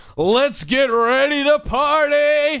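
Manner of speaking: high, very slow announcer call, "party" drawn out. Retelling how the announcer opened the fight night: imitating Michael Buffer. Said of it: "he comes out and he goes".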